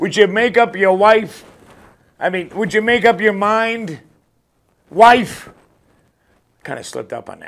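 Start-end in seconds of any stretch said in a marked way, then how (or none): 0.0-5.5 loud, high yell projected far off. Telling a joke about a neighbor flying a kite, imitating him yelling. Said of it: "the guy yells out".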